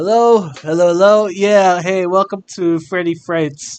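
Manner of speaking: casual phone message caller voice. Imitating Phone Guy greeting visitors at the carnival: Phone Guy voice. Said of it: "you mean, uh, Phone Dude? Like".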